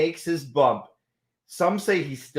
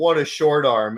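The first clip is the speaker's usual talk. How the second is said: dry, ironic, loud sarcastic delivery; 6 dB louder than usual. Retelling one's own remark about a clothesline: imitating own sarcastic remark. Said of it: "I go, like, sarcastic".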